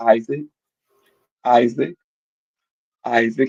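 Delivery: low, soft, calm settling voice. Recalling isaac yelling, the speaker reenacts calling his name, retelling own calm voice. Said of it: "I'm sending my calm voice".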